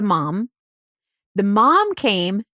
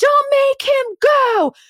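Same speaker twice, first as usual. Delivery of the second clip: loud screaming. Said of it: "June Cleaver is screaming at the cop".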